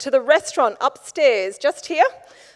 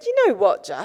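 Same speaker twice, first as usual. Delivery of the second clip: put-on deadpan delivery, lower pitch; 5 semitones lower than usual. Retelling what the pub owner said about M I six: imitating a deadpan reply. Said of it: "absolutely deadpan".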